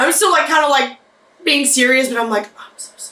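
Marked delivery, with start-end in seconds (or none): 2.5-3.1 very quiet whispered mutter under the breath. Apologizing in character while still being serious: said under the breath. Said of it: "very under my breath".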